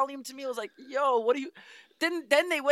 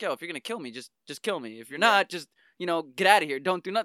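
acted deadpan, flat delivery; 8 semitones lower than usual. Describing a comic scene, acting out one character confronting another: acting out a deadpan line. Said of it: "he's just deadpan".

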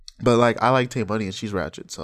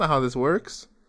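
plain

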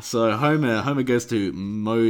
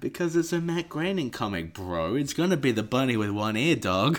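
ordinary talk

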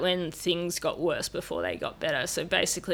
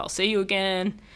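ordinary talk, nothing marked

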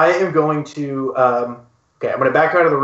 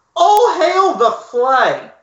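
shrill, very high-pitched in-character shout; 14 semitones higher, 3 dB louder than usual. A player's character stands between the doors and calls out, in-character shout. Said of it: "I am going to shout".

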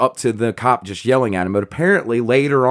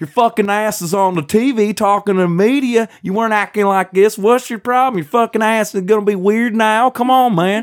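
put-on strong, heavy Southern accent, pitched up; 10 semitones higher than usual. Quoting what a cop said to the kid, in a strong southern accent. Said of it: "he's so Southern that his accent is hilarious".

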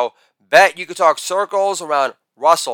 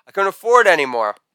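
plain

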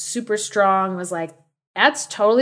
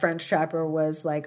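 plain

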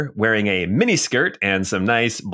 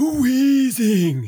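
very high-pitched monster creature cry. Voicing a disgusting ball creature appearing: weezing creature cry voice. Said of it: "And you hear this".

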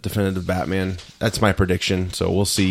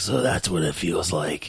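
put-on smoker voice, quieter; 4 dB quieter than usual. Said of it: "I'm not gonna talk to a smoking voice guy".

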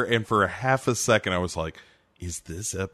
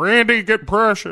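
very high, loud, raised calling voice; 12 semitones higher, 8 dB louder than usual. Saying Randy again, the voice almost slipping into another impression: Ted Levine voice. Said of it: "almost turned into a, uh, uh, Larry Flynt".

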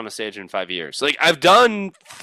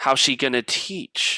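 usual speaking voice

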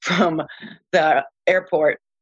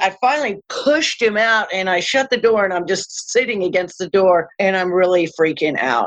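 plain

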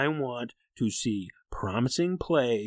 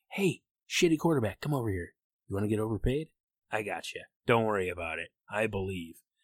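put-on whisper; 3 semitones lower than usual. Mocking John Elway luring a bad quarterback: imitating John Elway whispering. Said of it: "and he is whispering".

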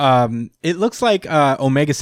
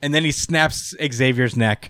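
ordinary talk

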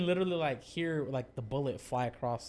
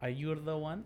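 put-on Eastern European accent; 2 semitones higher than usual. Quoting a dancer at a Vegas strip club: Ukrainian accent. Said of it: "she's like a Ukrainian-ass voice".

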